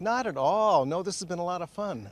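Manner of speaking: dry, lightly sarcastic tone. Answering how frustrating the delayed rebuild has been: sarcastic. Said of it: "I sense some sarcasm there".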